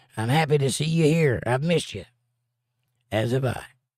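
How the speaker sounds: ordinary talk, nothing marked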